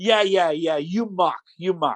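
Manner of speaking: put-on Italian accent in English. Retelling a man who mistakes his name, the speaker imitates him in an italian accent. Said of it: "in his Italian accent".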